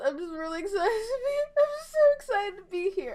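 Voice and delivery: very high, tearful, fighting tears, crying. Streamer speaking to an audience, holding back tears. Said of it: "I'm trying not to cry".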